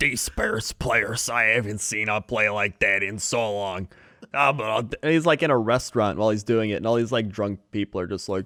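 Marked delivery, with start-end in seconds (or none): 0.0-3.9 put-on heavy, thick Chicago accent, dropped low in pitch. Asked how he talks, imitating him in a deeper voice. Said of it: "it's like deeper".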